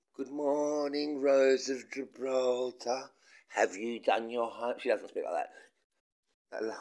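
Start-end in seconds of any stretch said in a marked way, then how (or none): 0.2-4.8 put-on slow, condescending voice, as if to a small child. Greeting a woman called Rose of Gibraltar, mock talking to a child. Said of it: "saying good morning to a woman like it's a child".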